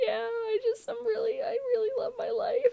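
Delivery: put-on very high, tearful crying voice. Retelling a partner crying outside holding a card: imitating Wayne crying. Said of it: "he's, like, crying".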